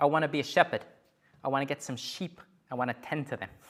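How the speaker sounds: tongue-in-cheek, jokey, exaggerated Boston accent. Retell Matt Damon's reply when he is challenged about what he wants, in Matt Damon's tongue-in-cheek Boston accent. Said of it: "You can judge the Boston accent afterwards".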